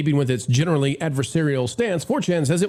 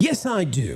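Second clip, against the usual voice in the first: put-on British English accent. Acting out a reply in a mock exchange: English accent. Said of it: "my English accent".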